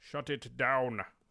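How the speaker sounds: put-on Scottish-accented speech. Talking about a card that counters spells, slip into a Sean Connery voice. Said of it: "I went into Sean Connery".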